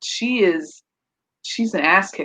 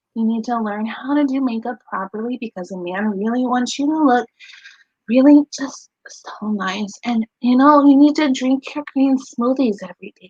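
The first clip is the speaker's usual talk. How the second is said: put-on voice of a small kid, childish little-girl; 4 semitones higher than usual. Speaker mimics exactly how a woman talked to them, in a childish voice imitating her. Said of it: "This is exactly how she talked".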